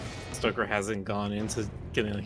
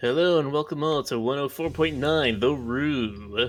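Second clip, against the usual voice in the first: radio announcer voice, higher and louder; 3 semitones higher, 4 dB louder than usual. After the others praise someone's radio voice, showing one off: radio announcer voice. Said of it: "he's got a pretty good radio voice".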